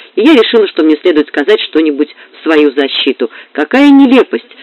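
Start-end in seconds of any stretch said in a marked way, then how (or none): 3.5-4.4 exclaiming aloud with a pitched-up voice. The narrator, wanting to defend herself against silly gossip, exclaims. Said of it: "воскликнула я".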